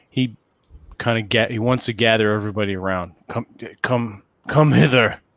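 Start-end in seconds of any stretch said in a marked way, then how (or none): 3.3-5.1 put-on orc monster voice, whispered. Game master as Grat gathers everybody around him, Grat's whisper. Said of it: "in as much as Grat can whisper".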